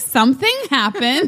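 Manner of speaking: put-on high, sheepish, guilty little-kid voice. Retelling her admitting something happened at her bachelorette party, imitating a caught little kid. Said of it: "That's what she sounded like".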